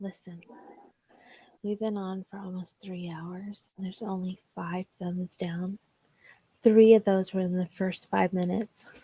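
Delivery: barely audible, very quiet hushed half-whisper. Addressing the audience mid-broadcast: half-whispering. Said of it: "I have to whisper this".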